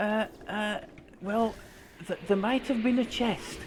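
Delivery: small, tiny little voice. Retelling what someone said over the headset, in a small little voice. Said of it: "this little voice came out of the corner of my uh, headset".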